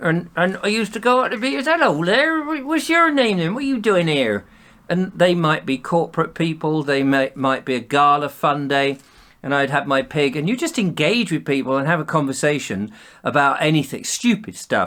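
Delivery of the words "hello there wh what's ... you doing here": put-on West Country Somerset accent. Retelling greeting people as a comedy farmer character: Somerset West Country accent. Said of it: "Somerset, West Country style accent".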